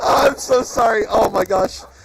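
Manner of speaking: laughing hard while talking, breathless. Reacting to a player's accidental loss: laughing hard while talking. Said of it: "I'm laughing so hard that I'm losing oxygen".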